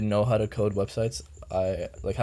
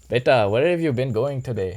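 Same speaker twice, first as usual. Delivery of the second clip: put-on Indian accent; 4 semitones higher, 6 dB louder than usual. Asked by the others to do indian, he tries a put-on indian accent. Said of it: "Okay, do Indian".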